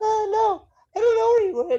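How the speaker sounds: loud, very high-pitched voice. Retelling a movie scene where a guard's mask is lifted: imitating a high-pitched voice. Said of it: "he's got the real high-pitched voice".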